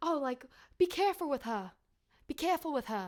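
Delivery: careful and her said without R. Describing their dad's speech, the speaker imitates him talking about the dog, dropping r's. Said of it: "he can't even say an R".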